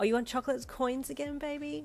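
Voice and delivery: put-on high, teasing, condescending baby-talk voice. Pinned against the lockers, you tease him about his reward: teasing condescending baby voice. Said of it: "in a teasingly condescending baby voice".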